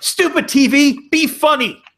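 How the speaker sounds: very high, drawn-out scream. Describing a Simpsons episode, imitating Homer Simpson screaming at his TV. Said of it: "he starts screaming and shaking".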